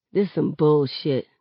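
plain

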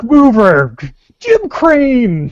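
loud, very high, acted anime-style shouting. Acting out a wrestler who shouts each move's name: imitating a wrestler shouting move names. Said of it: "the guy that shouts the name of the move".

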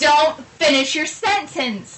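slow, drawn-out yelling. Retelling a tv news report of a death, the speaker re-enacts screaming at the tv. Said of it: "I'm like screaming at the TV".

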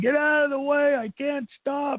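very high, shrill scream. Recounting going down a ski slope unable to stop, retelling a scream. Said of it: "I'm screaming".

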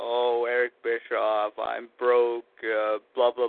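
low, whiny, mocking complaining tone.

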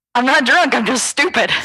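high, excited, worked-up shouting. Telling a story to the other speakers, yelling. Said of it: "Stop yelling".

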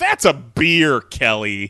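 mock sarcastic, snarky, drawn-out sing-song delivery. Retelling an earlier text reply to Kelly: imitating a snarky retort. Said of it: "snarky response that was like".

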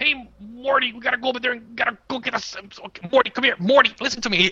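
high, nonstop chatter. Describing a cartoon scientist who burps and talks: imitating Rick from Rick and Morty. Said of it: "he constantly says Morty when he's talking".

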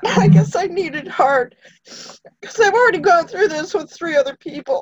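crying, tearful, words very high. Speaker describing going through this with three family members, crying. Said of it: "Sorry, I'm crying again".

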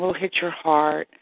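ordinary talk

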